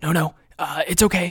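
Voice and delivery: harshly whispered. Reading a story, EJ hushes Wes as footsteps approach, harsh whisper. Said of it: "EJ whispered harshly".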